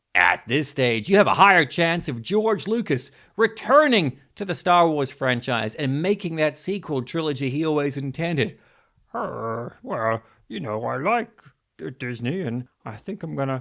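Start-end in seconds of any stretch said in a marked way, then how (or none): 9.2-13.6 muffled put-on voice, as if mouth stuffed full. Imitating George Lucas talking about Disney: George Lucas impression. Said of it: "Kermit the Frog with his mouth shoved full of socks".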